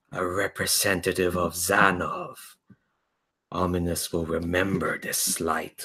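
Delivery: deep, low bass creature voice. Narrating a game, a spiked head with a big eye addresses Solara: bass voice. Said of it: "you hear the bass voice going".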